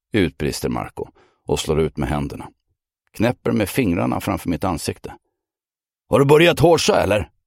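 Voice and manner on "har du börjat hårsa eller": shrill, loud, high-pitched accusing voice. Marco snaps his fingers in front of the narrator's face, accusing tone. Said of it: "Den anklagande tonen".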